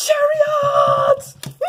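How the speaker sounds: high, loud, excited shouted outburst.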